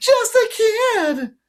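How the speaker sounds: very high, loud, shrill, resentful falsetto. A man mocks his friend's words back at him, in a mocking falsetto. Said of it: "mimicked in a falsetto voice".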